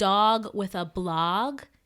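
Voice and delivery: very slow, drawn-out New Jersey accent. Naming a TV show title aloud: Jersey accent. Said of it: "a Jersey accent".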